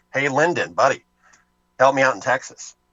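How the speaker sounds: put-on pleading voice in a Boston accent. Retelling history, the speaker plays Kennedy phoning his vice president, in Kennedy's Boston accent. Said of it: "insert a Boston accent here".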